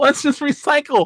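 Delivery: put-on very high, squeaky character voice. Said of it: "Rian Johnson to that impression".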